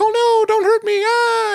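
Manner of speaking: loud, high-pitched cry of fright. Describing an early SNL clay figure getting stomped on, imitating Mister Bill's frightened cry. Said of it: "always get like stomped on and be like".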